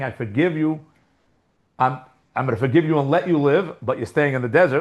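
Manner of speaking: usual speaking voice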